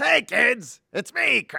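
belted high, with a rough voice, slow. Trying an impression after being asked for one: Krusty impression. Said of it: "I've done Krusty".

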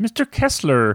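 little frog puppet character voice. Giving a film quiz clue for points: Kermit voice. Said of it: "why'd you put a Kermit voice on".

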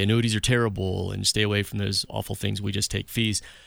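ordinary talk

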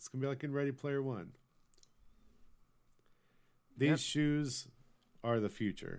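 openly sarcastic, tongue-in-cheek tone. Joking about gaming shoes with others: sarcastic. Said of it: "I'm just being sarcastic".

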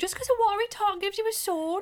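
very high-pitched, loud, put-on British accent. Speaker quoting a line while another asks them not to, put-on accent. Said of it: "don't do the accent".

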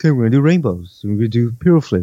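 put-on unhurried, matter-of-fact, very calm voice. Describing a video of tandem flights, imitating Alan's calm voice. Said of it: "Just very calmly just saying".

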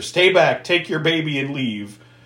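ordinary delivery

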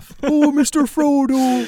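very high-pitched, loud, drawn-out voice. Imitating how actors say a line: slowed down Swedish Chef voice. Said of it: "like a slowed down Swedish chef".

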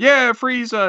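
high-pitched crowd yelling and cheering. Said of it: "where people would be yelling".

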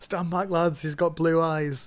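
loud, high-pitched shouting. Retelling a character's warning from a scene: imitating a shout. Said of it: "I like how he shouts".

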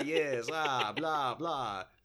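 put-on vampire voice. Acting out a good husband as a vampire: Count Dracula voice. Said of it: "That's the Count".

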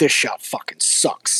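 slow contemptuous swearing. Retelling how the director cursed on set: imitating Dennis Hopper cursing. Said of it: "just cursing at him the whole time".

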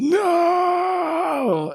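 high, anguished cry. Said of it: "falls to his knees, uh, and shouts".

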